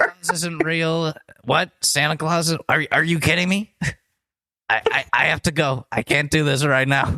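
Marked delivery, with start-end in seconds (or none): 1.4-7.2 put-on politician voice with mock crying. Learning that Santa Claus isn't real: Donald Trump impression, mock tearing up. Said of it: "Tearing up".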